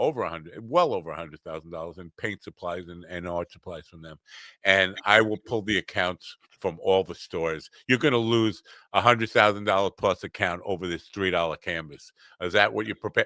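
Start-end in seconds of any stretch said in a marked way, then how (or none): none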